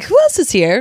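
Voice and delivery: completely baffled, confused, bewildered tone. Picturing a character hearing a yell from afar: Bertha Jorkins sounding confused. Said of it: "completely confused Bertha Jorkins".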